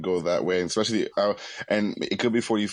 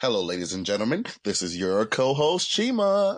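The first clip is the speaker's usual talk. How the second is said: exaggerated, overdone put-on announcer voice; 3 semitones higher than usual. Co-host greeting listeners on a podcast, in an exaggerated put-on announcer voice.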